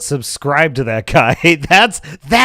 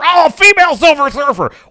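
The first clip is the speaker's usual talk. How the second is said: mock excitement, high and angry-sounding; 9 semitones higher, 4 dB louder than usual. Mocking excited commentators who sound angry: imitating angry-sounding excitement. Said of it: "why do they sound so angry?".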